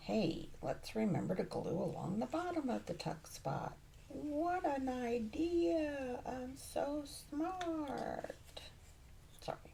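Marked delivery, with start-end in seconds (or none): 4.1-8.6 mocking, over-the-top praising tone.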